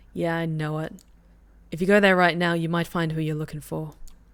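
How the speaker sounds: ordinary talk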